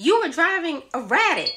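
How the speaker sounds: very high, shrill, swooping screaming bark. Retelling what an officer at the car window said: imitating an officer yelling. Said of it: "he's screaming and yelling at me".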